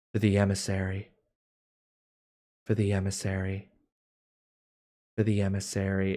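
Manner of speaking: soft repeated murmur. Voicing an ant suddenly repeating a phrase: ant speaking very softly. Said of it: "very softly just repeating this three-word phrase".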